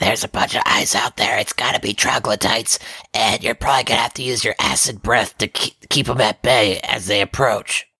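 whispering as quietly as possible. In a tabletop game, a player's character tells Koo what he saw, whispering. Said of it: "I'm whispering to Koo the whole time".

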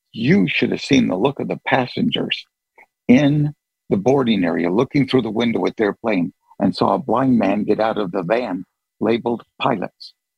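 ordinary delivery

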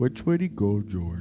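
dim cartoon character voice. Friends trying out silly voices together: dumb-guy Lenny voice. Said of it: "that Bugs Bunny, like, dumb guy voice".

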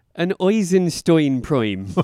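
put-on Irish accent, brogue style. Listing properties of the number 59: Irish brogue. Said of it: "and I like to do this in a brogue".

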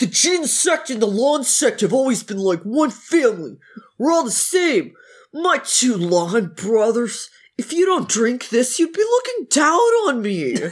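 put-on dumb, idiot character voice. Acting out a character's line while recapping a story, in an idiot voice. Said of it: "That's the perfect voice for this idiot".

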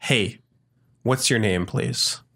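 very friendly manner. Voicing a character who asks a girl her name: very friendly demeanor. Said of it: "in a very friendly demeanor".

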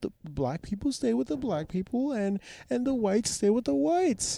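put-on crying, pleading voice. Retelling what a crying woman said after being caught on television: imitating a woman crying. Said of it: "The racist lady starts crying and starts and starts going like".

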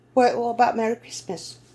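terrible, high put-on English accent. Discussing a missed slogan, suggesting another one in a terrible english accent. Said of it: "that was a terrible English accent".

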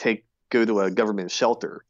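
ordinary delivery

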